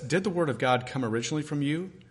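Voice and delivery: ordinary talk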